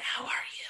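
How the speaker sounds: hushed, breathy, barely voiced whisper. Recapping an awkward cafe meeting, retelling a whisper. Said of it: "She's like whispering".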